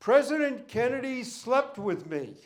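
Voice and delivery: put-on heavy Irish accent. Bookshop worker retelling a caller's first words on the phone: thick Irish brogue. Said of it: "very thick Irish brogue".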